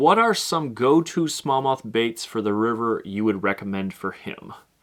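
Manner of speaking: ordinary talk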